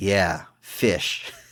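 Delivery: put-on flat, deadpan delivery. Recounting a movie scene, deadpan Marv impression. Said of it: "but the real deadpan".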